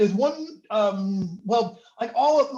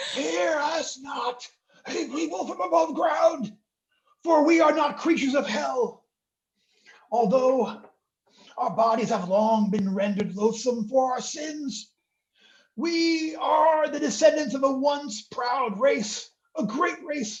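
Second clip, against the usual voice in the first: raspy, phlegmy voice rasping through mucus; 4 semitones higher than usual. Showing listeners a put-on voice for a dramatic speech: raspy, mucus-choked voice. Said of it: "a raspy voice spoken through ropes of mucus".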